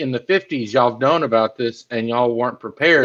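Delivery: ordinary delivery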